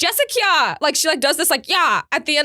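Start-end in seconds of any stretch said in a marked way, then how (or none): 0.0-0.8 play-acted cross, drawn-out, pitched-up angry call. Describing how the speaker's mom calls the speaker's name when mad, imitating mom's mad name call. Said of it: "when she's mad at me, she goes".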